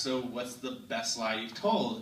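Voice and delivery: normal talking voice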